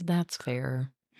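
soft, sassy delivery. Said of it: "That sounded like a sassy dig".

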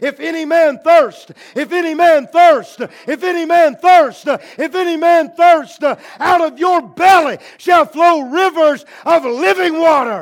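loud, repeated, shouted calling out. Retelling the water pouring down the ramp, voicing Jesus: imitating Jesus shouting. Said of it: "and Jesus was shouting".

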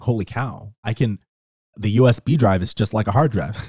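plain

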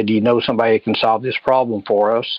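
ordinary delivery

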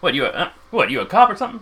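startled, caught off guard, high and rising voice. Voicing the booth guy, who freezes when asked about a case file: voicing the startled carnival booth guy. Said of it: "He kinda freezes for a second".

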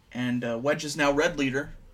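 plain

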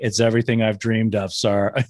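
bone-dry, flat, deadpan delivery. Retelling a line from an episode: imitating a very dry delivery. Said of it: "with a really dry, dry delivery".

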